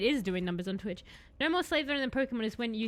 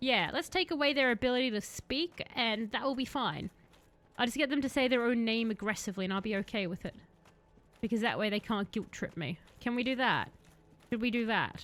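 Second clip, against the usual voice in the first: ordinary talk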